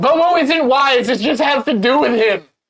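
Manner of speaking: very high, loud yell. Playing a character who calls around a corner: yelling around a corner. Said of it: "I'm gonna yell around the corner".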